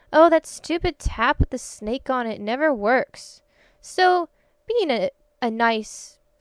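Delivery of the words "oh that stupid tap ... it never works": normal talking voice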